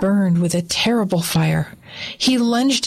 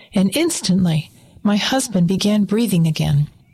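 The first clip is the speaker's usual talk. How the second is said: plain reading voice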